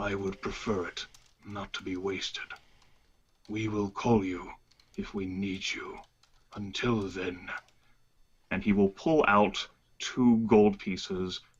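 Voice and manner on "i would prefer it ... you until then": composed, superior, restrained, quiet, very calm displeasure. A player's character answers someone who offered to get him something, very calm. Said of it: "he will say very calmly".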